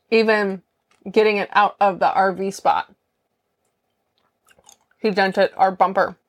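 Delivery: speaking around ice, mouth full. Telling listeners about a mishap moving the rv, talking with ice in mouth. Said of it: "I have ice in my mouth".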